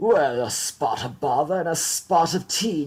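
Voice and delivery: put-on British accent. Playing British Uncle Howard the barrister in a Christmas bit, British Uncle Howard voice. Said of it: "British Uncle Howard".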